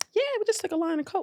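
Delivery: very high, offhand, nonchalant, breezy tone. Retelling his answer about the bathroom: imitating a very casual reply. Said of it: "So very casually".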